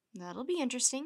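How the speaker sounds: plain reading voice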